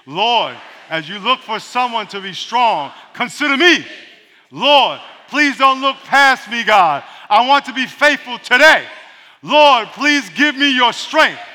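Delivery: loud, slow, fervent voice.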